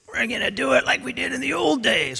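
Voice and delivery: rough, gravel-throated delivery. Retelling what a man said in a philadelphia alley, gravelly voice. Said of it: "with that gravelly voice. I can't do it exactly like he can, but it was something like that".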